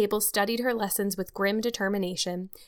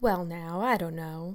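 gentle, calming, comforting, soothing tone; 3 semitones lower, 4 dB quieter than usual. Matthew answers Anne soothingly after she calls herself a dunce. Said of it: "said Matthew soothingly".

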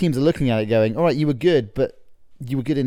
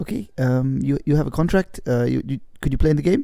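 put-on German accent. Acting out picking the German team, pressing a reluctant player to play, German accent. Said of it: "German accent, please".

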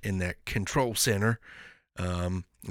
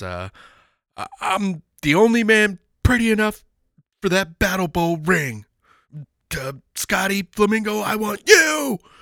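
drawn-out yelling; 11 semitones higher, 6 dB louder than usual. Recounting a wrestling promo where a wrestler calls out his rival, retelling Johnny B. Badd's yell. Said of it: "but he's just yelling".

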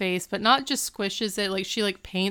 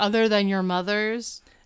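usual speaking voice

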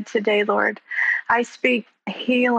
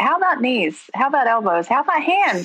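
play-acted, swooping, wry, needling sarcastic tone; 3 semitones higher than usual. Retelling what she thinks when preachers say stand: imitating own sarcastic retort. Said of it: "stand to my knees and say".

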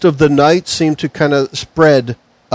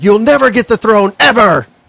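high-pitched, frantic yelling; 7 semitones higher than usual. Narrating a game scene, voicing the king confronting Gene: shouting. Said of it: "He's shouting at Gene".

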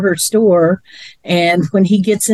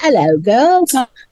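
casual, chatty put-on Australian accent; 4 semitones higher than usual. Retelling a show character talking to his plants: imitating an Australian accent. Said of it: "he starts talking in an Australian accent to 'em".

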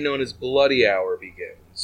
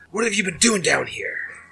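accusing, demanding, pitched-up tone; 7 semitones higher than usual. Voicing a scowling officer checking on a player's work: scowling. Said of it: "he just scowls and he says".

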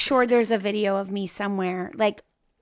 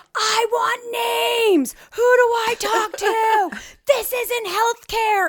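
very high, frantic, freaking-out scream; 12 semitones higher, 3 dB louder than usual. A mother retells walking up to her husband at the hospital, reenacted screaming. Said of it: "I'm screaming at him".

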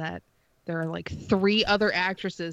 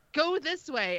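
acted-out yelling, higher, slower; 8 semitones higher than usual. Recalling listening to the first episode in the car: imitating own yelling. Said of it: "And I'm like yelling".

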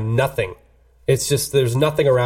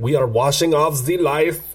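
fake, bad French accent drifting into German. Retelling a film scene, giving the other characters' reply in a bad french accent. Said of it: "actually kind of sounded German".

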